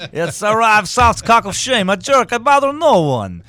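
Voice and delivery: put-on Russian accent. Doing a recurring russian character from the show: put-on russian accent. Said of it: "suddenly there'll be this Russian guy being like".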